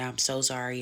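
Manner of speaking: imitated begging, pleading tone. Retelling how he apologized at the door: imitating someone begging and pleading. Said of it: "begging and pleading".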